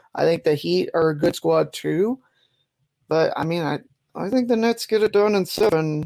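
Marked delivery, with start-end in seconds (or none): 3.1-6.1 very hesitant, unsure and tentative, pitched up. Making a playoff pick between the Nets and the Heat: very hesitant. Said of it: "he says very hesitantly".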